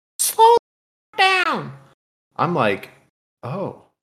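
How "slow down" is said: very high, shrill, swooping top-of-the-lungs scream. Retelling how an older woman turned and screamed at the speaker's truck: imitating a woman screaming. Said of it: "screams top of her fucking lungs".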